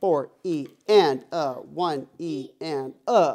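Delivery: loud, very slow, big delivery. Showing a student how to count the rhythm: counting nice and loud. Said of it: "say the numbers nice and loud".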